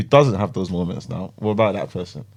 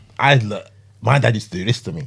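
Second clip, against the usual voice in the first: usual speaking voice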